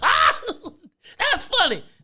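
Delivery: high-pitched voice, words bubbling with laughter. Imitating how Ryan laughs during the show: imitating Ryan laughing while talking. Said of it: "He be laughing like".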